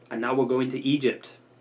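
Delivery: plain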